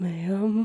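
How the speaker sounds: tiny, very quiet, hushed voice. Retelling a caller's reply on the phone: imitating a really quiet voice. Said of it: "this really quiet voice goes".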